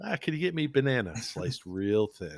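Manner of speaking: funny, comically delivered tone. Retelling a quote fans kept posting: imitating his funny way of saying it. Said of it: "the way he says it is just so funny".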